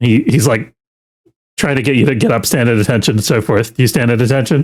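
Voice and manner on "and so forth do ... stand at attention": ordinary talk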